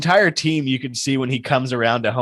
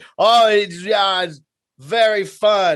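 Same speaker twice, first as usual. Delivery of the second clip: heavy put-on Japanese accent, pitched up; 7 semitones higher than usual. Retelling a fan-favorite guy drinking champagne, in a thick japanese accent. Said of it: "has a very very thick Japanese accent".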